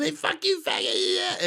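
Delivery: play-acted very high, mild heckling yell. Retelling a movie scene where a character yells at a man: imitating someone yelling. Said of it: "she keeps yelling at him".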